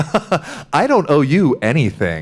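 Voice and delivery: play-acted incredulous, swooping, drawn-out delivery. Retelling what a passing mother said to her crying kid, imitating her incredulous tone. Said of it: "the mother sort of incredulously being like".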